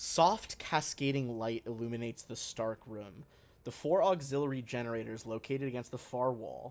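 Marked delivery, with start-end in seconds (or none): none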